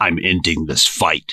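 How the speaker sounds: gritty, grainy voice. Comparing voices, imitating Master Chief: gritty Master Chief voice. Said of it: "grit to it".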